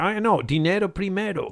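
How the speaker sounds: put-on high, thick American accent speaking Spanish. Retelling the road manager's reply, American accent speaking Spanish. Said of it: "he say with a very American accent".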